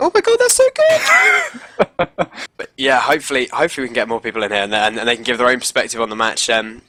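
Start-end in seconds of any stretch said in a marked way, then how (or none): 0.0-2.3 mock excited high shout, much higher, slower. Recalling shouting themselves hoarse at an intense match, retelling own high excited shout. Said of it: "My voice went high because I was just like going".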